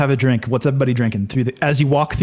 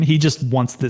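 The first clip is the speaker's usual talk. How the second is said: normal talking voice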